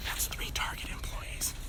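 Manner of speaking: soft, slow whisper.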